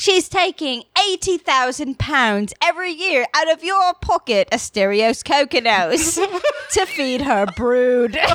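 put-on British announcer voice. Making a claim about Christine to a co-host, in a British announcer voice. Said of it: "that British announcer voice makes it sound super duper true".

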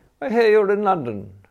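careless, casual tone. First-person narrator reads his own line after evading a question, careless. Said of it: "I said carelessly".

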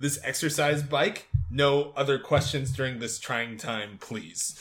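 ordinary talk

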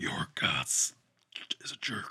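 whispered, breathy, hushed growling snarl. Voicing a snapping creature in a tabletop game, in a growling Dr. Claw voice. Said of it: "snaps and growls and goes".

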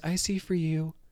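put-on soft voice. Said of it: "when she does her soft acting voice".

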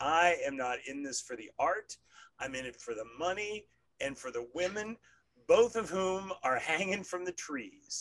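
rough, loud yelling. Retelling a rough movie producer's line from a film: imitating John Goodman yelling. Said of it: "yelling at somebody, and he says".

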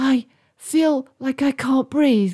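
gasped out. Katie, walking on with Sarah and Arthur, speaks up, gasping. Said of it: "gasped Katie".

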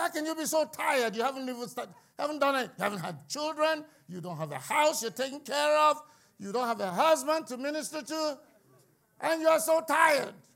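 scolding tone. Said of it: "I'm always getting on some of these young people".

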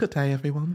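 stock put-on London accent. Describing someone's random habit, the speaker imitates Preston's London accent.

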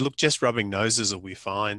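ordinary delivery

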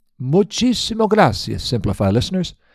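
bad put-on Italian accent. Closing the episode, the host thanks the listeners in a bad Italian accent. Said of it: "That was Spanish with a bad Italian accent".

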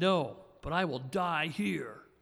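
rough, slow, military soldier-like voice. Reading scripture aloud, a cornered soldier refusing to come out: Joab's rough military voice. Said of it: "in Joab's rough military voice".

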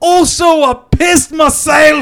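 high, loud, slow mock French accent.

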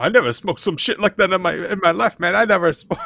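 acted panicky freak-out babble, high and loud. Retelling a character's reaction after taking too much: imitating someone freaking out. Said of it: "he starts, like, freaking out".

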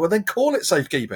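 high-pitched screaming. Recalling a televised announcement, retelling screaming at the TV. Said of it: "I'm screaming at the television".

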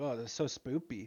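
ordinary talk, nothing marked

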